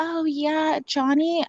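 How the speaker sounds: put-on very high-pitched, soft, small little girl voice. Imitating how Amber talked about him in interviews: high-pitched little girl voice imitating Amber Heard. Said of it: "very high pitched, like, little, like, girl voice".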